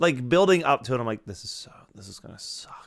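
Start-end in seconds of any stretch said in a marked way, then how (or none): 1.3-2.9 soft, unvoiced whisper full of dread.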